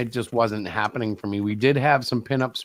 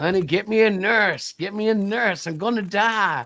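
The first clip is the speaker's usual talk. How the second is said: put-on slow, pitched-up, pleading old man voice; 9 semitones higher than usual. Acting out a future old self calling for a nurse: playing an old man wanting a nurse. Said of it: "Like the old man who wants a nurse".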